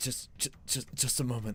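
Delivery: soft, breathy whisper under the breath. Narrating a scene where a man stares at a ring, whispering. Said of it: "he he kind of whispers".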